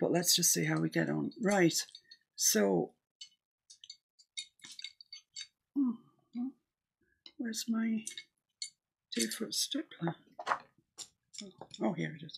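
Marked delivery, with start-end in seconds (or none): 2.3-10.1 anxious, searching, concerned and worried voice. While mixing highlight colors for a painting, concerned voice. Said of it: "Did you hear the concern in my voice there?".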